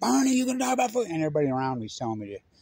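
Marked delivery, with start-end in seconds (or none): 0.0-1.1 shrill, very high-pitched shout. Retelling yelling a question at a political rally; retelling own yell. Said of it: "And I'm yelling".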